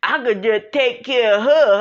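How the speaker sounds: mock dumb-sounding old street-guy voice. Imitating the ex trying to get out of child support: old Pookie and Ray Ray type guy. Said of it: "I'm talking like this, like a old Pookie and Ray Ray type".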